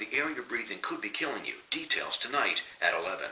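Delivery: gentle, eased-in, finessed TV news teaser voice. Showing a finessed way of reading the same news promo: softer finessed news promo read. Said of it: "You just finesse that a little bit".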